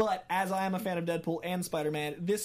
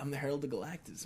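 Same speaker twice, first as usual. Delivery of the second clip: dude-bro style heroic voice; 3 semitones lower, 6 dB quieter than usual. Imagining Matthew McConaughey as the broiest Silver Surfer. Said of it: "Matt McConaughey as Silver Surfer, and he's just the broiest superhero".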